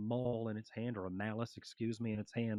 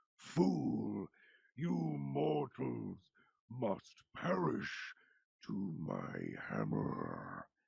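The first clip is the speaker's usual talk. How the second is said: rasping, rough, swooping growling dragon voice. A storyteller voices a dragon demon threatening the mortals: growling dragon voice. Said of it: "As this growling dragon".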